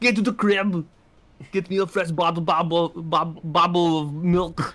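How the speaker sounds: put-on high baby voice, Austrian accent. Imagining a baby that turns into Arnie, the speaker voices it: Arnie impression as a baby. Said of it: "your baby becomes Arnie".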